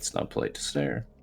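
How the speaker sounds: muttered whisper under the breath, barely voiced. Voicing a character warning someone staring: muttering under breath. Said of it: "I'll just kinda mutter under my breath".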